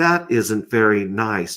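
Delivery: slow, measured smart speaker assistant voice. Retelling a voice assistant answering a whispered insult: imitating Alexa. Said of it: "you hear Alexa pop up and she's like".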